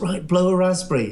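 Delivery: ordinary delivery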